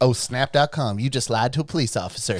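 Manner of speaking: put-on effeminate Southern accent, cop-like voice. Retelling what a police officer said to him, in an effeminate Southern accent. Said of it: "he had an effeminate Southern accent".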